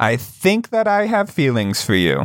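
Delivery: bold, gutsy, swooping delivery. Jokingly declaring feelings to the co-host: with a little more gumption. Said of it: "I'll say it with a little more gumption".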